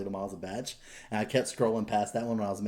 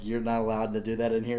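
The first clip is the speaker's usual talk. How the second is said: ordinary talk, nothing marked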